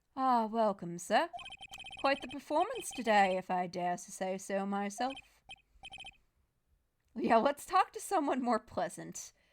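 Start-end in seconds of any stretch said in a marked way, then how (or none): 0.2-5.2 bad put-on British accent. Voicing the bellboy who greets the player: bad British accent. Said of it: "assigned a bad British accent".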